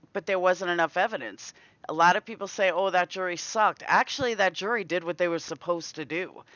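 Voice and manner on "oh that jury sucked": usual speaking voice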